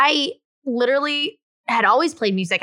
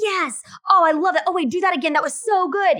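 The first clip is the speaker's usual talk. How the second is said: gushing, high, excited screaming and cheering; 7 semitones higher than usual. Imitating a photographer cheering on the person in front of the camera: imitating excited screaming. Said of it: "they're sitting there screaming like".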